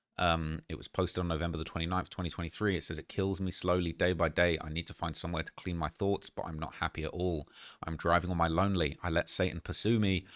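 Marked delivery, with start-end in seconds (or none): none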